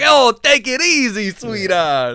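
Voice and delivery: loud, very high character voice with big swooping swings. Quoting a favorite line from the film: Penguin voice. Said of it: "He's like".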